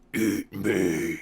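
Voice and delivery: low, throaty, guttural monster voice from the gut. Narrating a game, the speaker voices a tall creature looking down at Siska: guttural voice. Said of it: "it says in a guttural voice".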